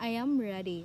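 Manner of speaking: pitch falls at the end of the word "ready". Teaching falling intonation for statements, falling intonation on ready. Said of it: "the pitch of your voice is going down".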